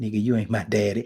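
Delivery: mock whispered voice. Retelling an imagined son at the bedside answering the father: imitating a whisper. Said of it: "And he whisper".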